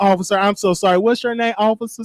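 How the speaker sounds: plain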